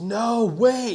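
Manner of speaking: put-on very high-pitched, loud, panicked cry. Retelling a buddy stopping the shot: imitating a panicked voice. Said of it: "he says it in, like, such a panic".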